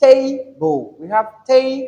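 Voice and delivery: first syllable of table stressed. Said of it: "So this is the first syllable".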